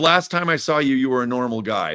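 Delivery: plain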